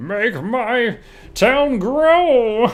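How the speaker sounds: villain voice, pitched very high. Streamer wraps up the stream with town upgrades, in a Power Rangers villain voice. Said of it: "That's my that's my best Power Rangers villain voice".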